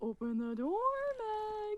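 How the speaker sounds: put-on creepy alternate voice. Retelling an alternate pretending to be a dead mom: creepy voice. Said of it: "the voice actor was so funny, he was like".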